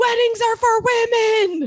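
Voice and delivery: shrill, very high, very loud screaming. Retelling a grandfather's reply to a wedding invitation, retelling a scream. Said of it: "he just screamed".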